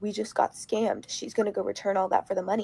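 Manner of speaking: acted shaky, near-crying voice. Recounting a store incident with her boyfriend, retelling near-tearful panic. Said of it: "I was literally shaking, almost crying".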